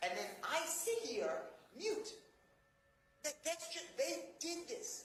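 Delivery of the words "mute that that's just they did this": high, strained, frustrated voice. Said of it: "You can hear the frustration in his voice".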